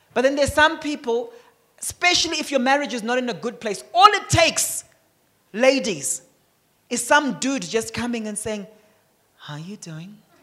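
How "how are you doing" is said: silky smooth-talker voice, deep, hushed, very low. Mimicking a dude approaching women in shaky marriages, in a mock smooth voice. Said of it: "With a smooth voice like that".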